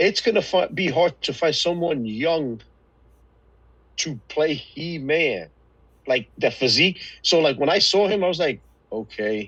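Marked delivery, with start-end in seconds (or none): 8.9-9.5 put-on flat monotone voice, lower pitch. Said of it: "Why were you so monotone?".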